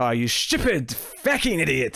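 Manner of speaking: put-on bold, fully committed Irish accent. Speaker recounting Laris scolding two Romulans, Laris in an Irish accent. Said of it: "in the Irish accent".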